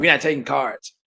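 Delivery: put-on rudeness. Repeating to a listener how a shop clerk curtly refused payment by card, imitating a rude attitude. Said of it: "had this kind of stank attitude".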